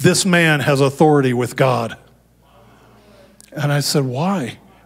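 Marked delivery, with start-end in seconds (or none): 0.0-2.0 put-on booming angelic voice. Quoting what an angel said to him, in a booming angel voice. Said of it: "the angel spoke with a booming voice".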